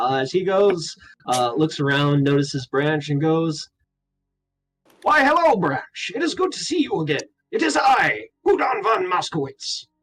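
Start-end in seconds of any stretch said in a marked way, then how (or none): 5.0-9.8 grand, noble, proud knightly voice, lofty and pitched up. Voicing a proud mouseling paladin greeting Branch: Udon von Moskowitz voice. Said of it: "a four-inch tall mouseling walk in with all the pride of a paladin".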